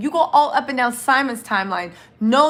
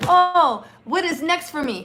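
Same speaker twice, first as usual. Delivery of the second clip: dry, halting, slow, choppy, pitched-up broken-up phrasing; 5 semitones higher than usual. Retelling what Simon said on a live video: imitating Simon's choppy accent. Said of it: "the choppy way he talks".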